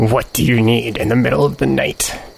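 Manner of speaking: rough, gruff, growling voice. Narrating the game, voicing whoever answers Azlo's knock, in a gruff, growly voice. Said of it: "You hear a gruff, growly voice asking".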